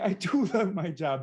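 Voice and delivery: emphatic, exclaimed delivery. Showing different ways to say a phrase, mimicking an emphatic exclamation. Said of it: "with the exclamation point".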